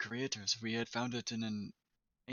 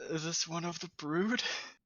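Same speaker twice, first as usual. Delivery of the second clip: put-on old man voice, pitched up, breaking into laughter; 6 semitones higher than usual. Player voicing an old man character asking about someone, in an old man voice. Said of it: "keep an old man voice going when I'm laughing".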